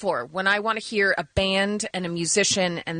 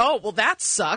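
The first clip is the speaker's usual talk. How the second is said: normal talking voice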